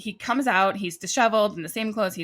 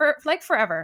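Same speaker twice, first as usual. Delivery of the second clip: mock breezy, flippant, offhand, pitched up; 6 semitones higher, 3 dB louder than usual. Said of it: "Just super flippant about it".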